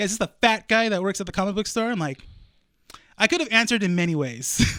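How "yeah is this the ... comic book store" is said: mock hostile, aggressive, confrontational tone. Retelling a phone call from a customer's husband: imitating an aggressive caller. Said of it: "He's all aggressive already".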